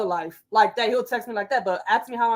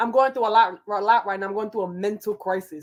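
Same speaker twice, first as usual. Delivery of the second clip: usual speaking voice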